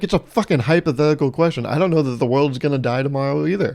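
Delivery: ordinary talk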